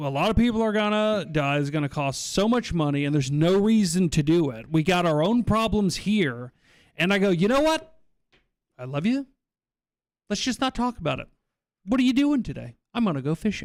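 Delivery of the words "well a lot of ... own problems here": ordinary talk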